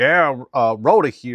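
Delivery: very loud, high voice, chewing while talking. Speaker retells Rhoda answering the radio, imitating Rhoda chewing into mic. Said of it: "and she's chewing".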